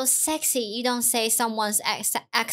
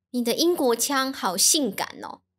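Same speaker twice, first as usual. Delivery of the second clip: ordinary talk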